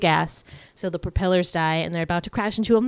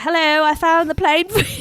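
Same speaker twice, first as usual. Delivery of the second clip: loud, very high, badly done British accent; 10 semitones higher, 5 dB louder than usual. Retelling a film scene at the airport, in Dan Aykroyd's bad British accent. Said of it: "And he has a British accent".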